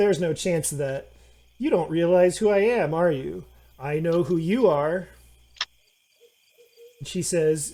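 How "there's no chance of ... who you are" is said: combative, arguing voice, flatly refusing. Voicing a gnome answering back in an argument: gnome in an argument. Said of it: "the gnome says".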